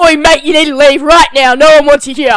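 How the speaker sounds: put-on very loud, thick, broad Australian accent. Retelling how a man told someone to leave, imitating David, Aussie accent. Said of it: "don't know why I made him sound so Aussie then".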